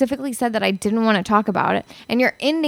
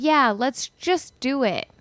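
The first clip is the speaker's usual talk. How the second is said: sarcastic tone; 3 semitones higher than usual. Answering a suggestion to just go ahead with a plan: sarcastic. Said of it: "I know you're being sarcastic".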